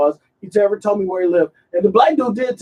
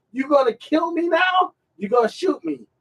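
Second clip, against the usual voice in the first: mock, pitched-up hollering at full stretch; 7 semitones higher, 5 dB quieter than usual. Retelling a man in a police body camera video: imitating someone yelling. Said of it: "dude start yelling".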